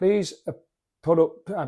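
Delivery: halting, stuttering, with stalled uh sounds. Saying cheers to everybody before getting into it, stuttering. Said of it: "please accept my apologies for my uh, stuttering".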